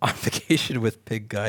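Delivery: laughing while talking, amused. Reading out a chat message about pink eye, laughing while talking. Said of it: "I'm sorry, I'm laughing".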